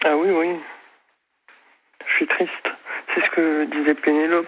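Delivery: slightly trembling, quavering, a bit shaky voice. Answering the other speaker's question about suffering; slightly trembling voice. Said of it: "j'ai la voix un peu chevrotante".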